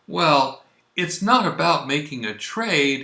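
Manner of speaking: mock courteous, very polite, trailing off. Retelling a man's answer to an offered trade, retelling a very polite reply. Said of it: "(again, very politely)".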